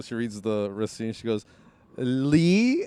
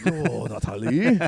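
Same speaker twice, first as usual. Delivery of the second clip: put-on British Chinese accent; 3 dB louder than usual. Retelling how a man at the counter reacted: imitating a British Chinese accent. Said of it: "your accent was like, it was British Chinese".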